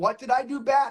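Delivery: ordinary talk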